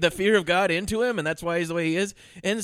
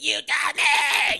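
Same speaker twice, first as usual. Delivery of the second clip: acted, high, yelping child's scream; 7 semitones higher than usual. Describing a kid in a slow-motion scene, imitating a kid screaming. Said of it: "kid screaming".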